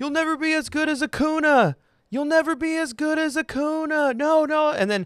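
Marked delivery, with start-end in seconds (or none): 0.0-4.1 very high, drawn-out, taunting heckling yell. Speaker retells a kid at a ballgame heckling a player: imitating a kid yelling. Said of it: "he's just yelling".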